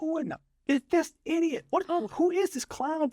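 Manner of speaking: mock, shrill, high screaming at full tilt. Retelling an on-set blunder: imitating Steve Buscemi screaming. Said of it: "Steve Buscemi screaming".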